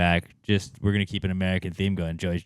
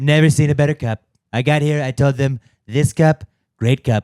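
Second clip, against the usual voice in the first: belted, loud, pitched-up, repetitive spiel; 7 semitones higher, 8 dB louder than usual. Riffing on the Gold Cup with another speaker: Trump impression. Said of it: "our impressions of Trump".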